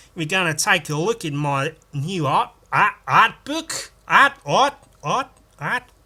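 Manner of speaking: loud put-on Australian accent, art said repeatedly. The speaker shows how an Australian would talk: put-on Australian accent. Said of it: "There's an Australian talk like this".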